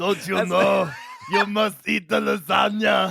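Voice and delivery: put-on rough, proclaiming Austrian accent. Answering a request for an impression, decreeing in Arnold Schwarzenegger decree impression. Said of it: "your best impression of Arnold Schwarzenegger just giving decreeing".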